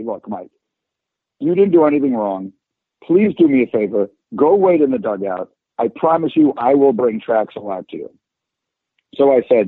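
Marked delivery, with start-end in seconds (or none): none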